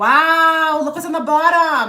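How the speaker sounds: loud, high yell with wow stretched long. Reading cards for viewers on a video call, yelling. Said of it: "Sorry to yell".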